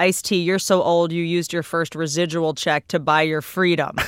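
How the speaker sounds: normal talking voice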